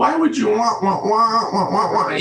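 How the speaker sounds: words dissolving into repetitive, wordless cartoon-adult babble. Retelling a mother's words as they blurred away: Peanuts adult voice. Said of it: "It would sort of transform into that voice".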